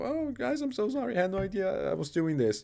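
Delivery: high, fake crying, laid-on tearful sorry tone. Mocking an apology the speaker does not buy: mock crying apology. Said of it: "the crying apology of".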